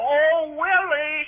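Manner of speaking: calling out with a holler. Retelling how a younger family member shouted after him: imitating someone hollering. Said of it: "she hollered at me".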